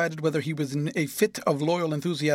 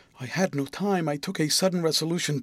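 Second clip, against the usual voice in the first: ordinary delivery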